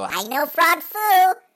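very high, loud, slow cartoon yell. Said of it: "he'd go".

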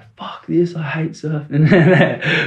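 frustrated crying outburst, slow, high, tearful wail. Retelling losing surfing competitions as a kid: imitating own past crying. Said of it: "I just was crying and shit like that".

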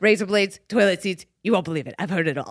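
put-on older woman voice.

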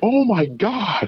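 very high-pitched, laughing, exclaiming delivery. Speaker retelling a girl's reaction when it came, imitating her laughing while talking. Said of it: "like she was laughing".

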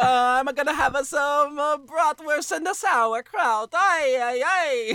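put-on northern Italian, southern German accent. Joking around with others, the speaker toys with a northern Italian southern German accent. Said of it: "a northern Italian southern German accent".

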